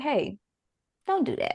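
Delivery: gentle little whisper, soft, barely there. Imitating the little voice in the back of the head: soft quiet inner voice. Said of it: "It's real soft. It's real quiet".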